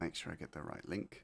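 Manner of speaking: very quiet whisper. Speaker finding the right link to share, whispering because it's secret. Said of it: "I'm whispering because it's secret".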